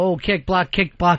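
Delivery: normal talking voice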